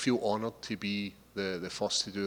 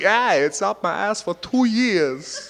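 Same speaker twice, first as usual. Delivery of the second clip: put-on halting New York drawl, higher and louder; 11 semitones higher, 13 dB louder than usual. Showing off another accent, Christopher Walken impression. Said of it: "and then somebody's like".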